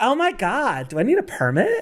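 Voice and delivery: put-on clueless Valley girl voice, high and swooping. Acting out a woman asking an officer about permits, in a Valley girl voice. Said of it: "my Valley girl".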